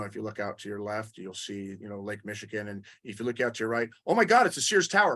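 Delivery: mock airline captain voice, like over a speaker.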